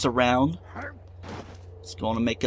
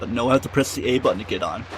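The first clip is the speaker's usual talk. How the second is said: ordinary talk, nothing marked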